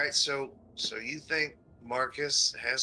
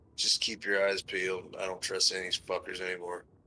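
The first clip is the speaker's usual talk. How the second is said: muttering, much lower pitch; 6 semitones lower than usual. Character falling back beside a travel companion, muttering under breath. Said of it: "under his breath is like".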